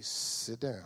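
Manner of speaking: very soft, quiet, calm, firm authoritative tone. Showing how to speak with authority without volume: quiet authority, not raised. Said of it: "you don't have to raise your voice".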